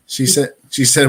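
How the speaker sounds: ordinary delivery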